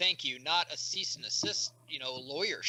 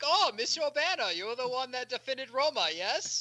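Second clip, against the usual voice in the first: bad put-on Spanish accent, high and slow; 7 semitones higher than usual.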